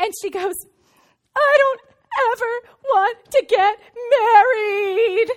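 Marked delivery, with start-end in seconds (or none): 1.4-5.3 high, loud, slow sobbing wail. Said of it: "she starts shaking, like, sobbing, crying".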